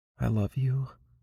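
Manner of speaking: feeble, weak, trembling, wavering, hushed voice. Reading a story where a dying character speaks: weak, wavering voice. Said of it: "in a weak, wavering voice".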